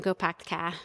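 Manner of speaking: put-on thick Massachusetts accent. Quoting a grandmother's saying: thick Massachusetts accent. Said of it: "she had a very thick Massachusetts accent".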